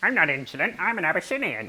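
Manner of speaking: goofy, high, silly put-on talking-cat voice. Answering a scolding as the cat, in a silly talking-cat voice. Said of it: "just you doing a silly voice".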